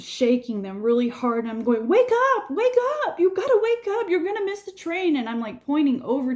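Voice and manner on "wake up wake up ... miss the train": frantic, panicked, very high yelling. Acting out shaking people in a crowd to wake them for the train, retelling a panicked yell. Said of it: "I'm yelling at them".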